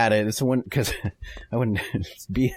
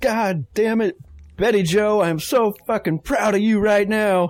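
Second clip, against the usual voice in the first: furious-sounding, bellowed, high, drawn-out angry yell; 9 semitones higher, 3 dB louder than usual. Playing a complimentary drill sergeant parent: mock screaming a compliment like pissed off. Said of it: "you still scream it at 'em like you're pissed off".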